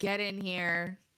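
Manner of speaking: sheer reluctance mixed with guilt. Retelling a man grudgingly telling the girl to get in, mock reluctance and guilt. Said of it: "Just very like sheer reluctance and guilt".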